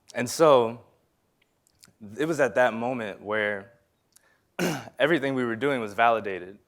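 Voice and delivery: choked up, emotion catching in the voice. Speaker recalling a validating moment for architecture students, choked up. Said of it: "I'm getting emotional".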